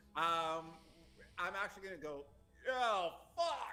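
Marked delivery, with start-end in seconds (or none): 2.7-3.7 shrill, very high, loud cry of pain. Crying out after a snapped ankle, not being quiet: loud pained cry. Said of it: "And I'm not being quiet".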